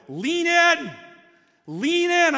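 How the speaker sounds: very slow, stretched-out, loud, high-pitched yell. Retelling to a brother what he yelled throughout the hill: retelling a brother's yell. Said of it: "you yelled at me all throughout the hill".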